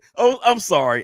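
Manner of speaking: words broken up by laughing throughout. Apologizing to the other speakers, laughing while talking. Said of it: "I'm laughing".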